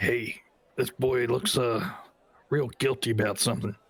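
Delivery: whispered, quiet aside. Voicing a character leaning over to another character: whispering to another character. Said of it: "lean over and whisper to Boris".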